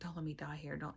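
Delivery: reenacted crying voice. Retelling being with the ER doctor, retelling crying and pleading. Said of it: "And I'm crying".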